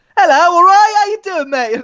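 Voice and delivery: very high, breezy, overly bright, too-cheerful voice. Retelling a sick call gone wrong: imitating a too-cheerful sick call. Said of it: "a bit complacent with it".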